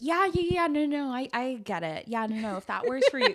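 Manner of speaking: eager placating tone. Retelling agreeing with an unvaccinated coworker: imitating own people-pleasing agreement. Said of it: "as a Libra and a people pleaser".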